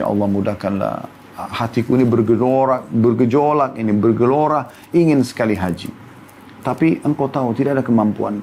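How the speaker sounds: ordinary talk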